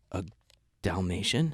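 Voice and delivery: put-on flustered, nervous, unsure tone. Retelling a flustered answer to a question about a film: imitating own nervous answer. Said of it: "I was so nervous".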